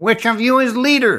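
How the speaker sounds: surprisingly piercing, penetrating, high-pitched voice. A stranger halts near travelers and asks which of them leads: piercing voice. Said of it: "spoke Ruvan in a surprisingly piercing voice".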